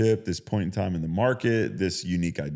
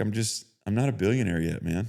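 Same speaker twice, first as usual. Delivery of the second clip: put-on depressed, sad voice. Retelling a friend's sad phone call: imitating a depressed friend. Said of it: "he's just sad. He's, like, depressed".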